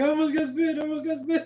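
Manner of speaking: put-on weepy crying voice. Retelling how a friend reacted after almost getting spit on: imitating someone crying.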